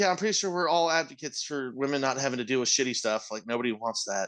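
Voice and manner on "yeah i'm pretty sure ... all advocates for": plain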